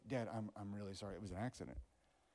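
put-on, broken, contrite, remorseful voice. Retelling a son's confession of an accident: imitating a broken, sorry son. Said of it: "broken about it".

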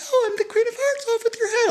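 tiny, very high, chirpy little bird voice. Recalling a tiny girl from fifth grade cast in the play: chirping little bird voice. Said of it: "chirping, like little bird voice".

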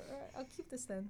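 high, soft, put-on resigned voice. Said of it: "And I was like".

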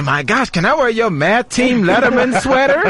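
high woman's voice. Joking about how the women would react to the math team: imitating the women. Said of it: "I bet you the women just say".

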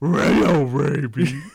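cartoon dog voice. Describing a cartoon scene, quoting Scooby-Doo in a Scooby-Doo voice. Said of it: "There's your Scooby impression".

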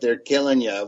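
ordinary delivery

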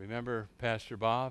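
mock grave, very solemn, somber tone. Quoting a pastor on a phone call, in a very solemn voice. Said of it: "in a very solemn voice".

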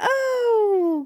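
gushing, very high cooing voice.

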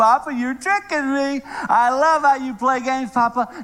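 high voice, laughing while talking, giggling through words. Retelling the girl's reply while they collect luggage, imitating Naya laughing while talking. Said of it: "she's still laughing".

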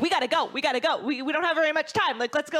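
high-energy, fast delivery. Demonstrating one of their many show styles, the high-energy, fast delivery. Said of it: "the really high energy, fast show".

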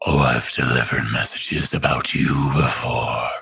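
gravelly character voice. Voicing a messenger squirrel answering how it knew someone: gravelly voice. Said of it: "the gravelly voice thing".

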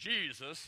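loud, rising, fervent preachy tone. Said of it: "You don't have to say it with that tone".

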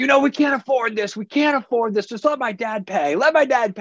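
shrill, scolding screaming. Retelling a wife berating her husband in a hotel line: imitating a wife screaming. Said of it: "getting screamed at by his wife".

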